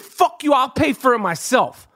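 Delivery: ordinary talk, nothing marked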